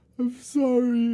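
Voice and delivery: very high, acted-out snotty ugly crying and sobbing. Telling a story of being caught and pleading, acting out your own past crying. Imitating sobbing. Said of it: "ugly crying snot out my nose".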